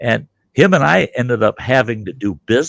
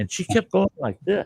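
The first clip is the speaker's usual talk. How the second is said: ordinary talk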